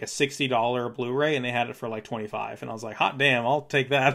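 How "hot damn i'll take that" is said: ordinary delivery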